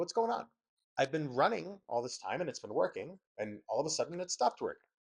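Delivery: ordinary talk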